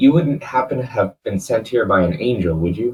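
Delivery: voice brought right down. Walking through the city center with a companion, asking a question in a lowered voice. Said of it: "I kind of lower my voice at this".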